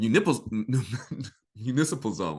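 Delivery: words breaking up with laughter throughout. Tripping over a word while explaining, laughing while talking. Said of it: "I'm sorry, y'all, I'm laughing".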